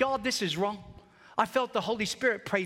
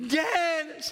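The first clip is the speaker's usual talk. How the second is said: put-on sobbing voice, higher pitched; 7 semitones higher than usual. Retelling a childhood story, the speaker acts out calling his brother while sobbing. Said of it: "I am sobbing".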